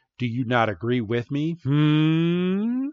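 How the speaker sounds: creepy, pressing, slow and drawn-out hmm. Retelling a scene where the chairman leans in close: imitating a creepy chairman. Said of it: "leans in all sorts of creepy".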